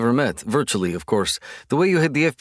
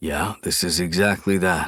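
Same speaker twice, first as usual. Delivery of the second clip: quiet muttering, lower; 7 semitones lower than usual. Reading a story aloud, a character answers a murmured remark: muttering back. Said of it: "muttering back".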